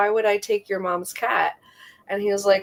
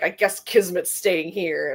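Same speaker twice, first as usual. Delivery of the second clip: put-on grumpy, grouchy voice; 2 semitones lower, 4 dB quieter than usual. Retelling what someone said on coming in: imitating someone grumpy. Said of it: "all grumpy".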